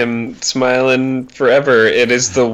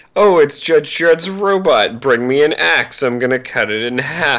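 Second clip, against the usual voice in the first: usual speaking voice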